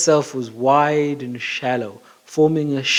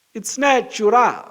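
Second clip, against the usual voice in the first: terrible put-on Portuguese accent, pitched high; 9 semitones higher than usual. Reading aloud a quoted description of a native town, in a terrible Portuguese accent. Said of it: "terrible attempt at a Portuguese accent".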